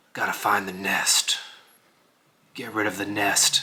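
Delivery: quiet, hissed through the teeth. Voicing Frostbite after the dwarf asks what the plan is, in a hissing Geralt-like voice. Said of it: "I realized with the hissing voice".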